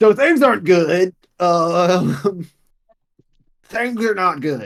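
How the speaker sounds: loud, slow, flustered half-orc voice. Voicing a half-orc who bursts into the room with bad news: flustered half-orc NPC voice. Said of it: "half-orc burst in the room and he goes".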